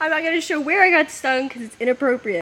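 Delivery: high, tearful voice close to crying. Just stung by a bee while working on the car, sounding like crying. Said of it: "I sound like I'm crying right now".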